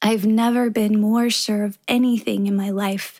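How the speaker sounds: ordinary delivery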